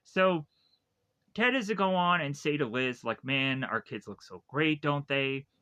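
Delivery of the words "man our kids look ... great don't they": ordinary talk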